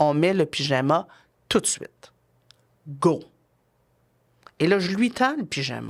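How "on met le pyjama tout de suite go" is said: colder, cool, firm, directive tone. Demonstrating step two, a parent tells Antonin to put on pyjamas, colder and more directive. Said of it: "un peu plus froide, un peu plus directive".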